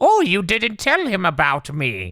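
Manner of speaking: very high, swooping woodland-spirit goblin voice. Speaker imitating a character's line while praising voice actors' range, in a woodland spirit goblin voice. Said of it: "he's like a woodland spirit, just being like".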